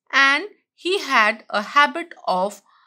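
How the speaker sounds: ordinary delivery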